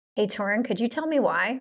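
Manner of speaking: very proper, formal, grown-up-sounding tone. Julie asks torin why, as he prompted, in a very proper voice. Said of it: "You sounded so proper".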